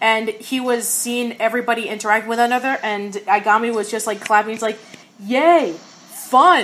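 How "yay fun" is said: mock bored, couldn't-care-less deadpan with zero enthusiasm. Describing a character clapping as everyone interacts, retelling a deadpan 'yay, fun'. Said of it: "the most deadpan not even giving a crap ever".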